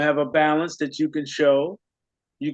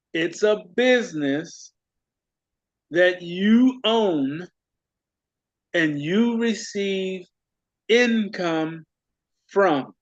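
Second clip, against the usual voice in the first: very slow, halting, deliberate, spelled-out delivery; 3 semitones higher than usual. Repeating a point about receiving income from a business: saying it a little slower. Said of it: "I'll say that a little slower".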